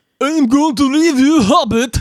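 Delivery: very high-pitched fake Russian accent. Asked to give a hobbit line in a russian accent, doing it. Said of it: "can you give me Hobbit in a Russian accent".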